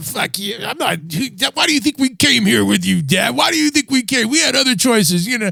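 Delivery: mock kid yelling, high and angry. Recounting a restaurant scene, speaker quotes a kid answering his dad; retelling a kid's yelling. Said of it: "the whole time he was yelling back".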